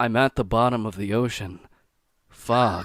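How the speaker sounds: slow, flat, droning monotone. Discussing narrators who stay flat throughout, imitating Mr. Creeps' monotone reading. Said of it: "just kind of like monotone all the way through".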